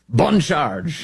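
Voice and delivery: slight French accent, ending on a rise.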